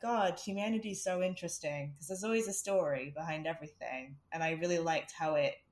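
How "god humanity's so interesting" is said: plain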